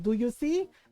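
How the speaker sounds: furious, angry scolding delivery. Retelling a mom scolding a son in trouble: imitating an angry Filipino mom. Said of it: "she went full angry Filipino mom on him".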